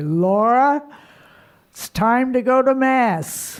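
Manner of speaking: big booming call. You recall a voice heard around quarter to five in the morning: imitating Jim Sweeney's booming voice. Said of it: "I hear this booming voice say".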